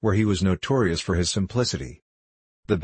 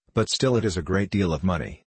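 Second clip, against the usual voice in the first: ordinary delivery, nothing marked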